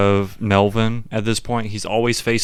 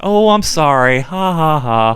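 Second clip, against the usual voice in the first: put-on innocent comic girl voice, higher; 6 semitones higher, 5 dB louder than usual. Retelling a woman's reaction in a scene, in an innocent girlish voice. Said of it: "very like Barbie girl, like innocent comedy".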